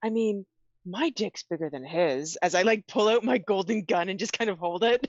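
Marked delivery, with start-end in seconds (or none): 0.0-2.4 stage whisper, said as an aside. Player's character leans over to Machiko to speak, in a stage whisper. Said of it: "say in like a stage whisper".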